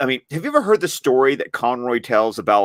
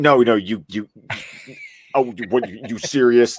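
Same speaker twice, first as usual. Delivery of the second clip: doubting, skeptical New York guy voice, stammering. Retelling a guy's reaction to meeting Batman's cartoon voice, the speaker imitates a skeptical New Yorker. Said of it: "that sort of skeptical New Yorker".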